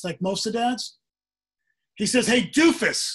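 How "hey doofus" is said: put-on male yell, higher and louder. Retelling a man calling to a kid from a parking lot: imitating a man yelling. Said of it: "he yells from the parking lot".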